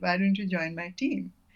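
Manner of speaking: ordinary talk, nothing marked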